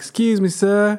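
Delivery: fake charming Southern accent. Retelling how a woman cut in line: Southern US accent. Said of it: "she threw on her southern charm like".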